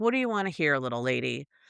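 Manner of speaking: put-on creepy tone of voice. Retelling how a killer talked to a woman: imitating a creepy way of talking. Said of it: "the way he was talking to her".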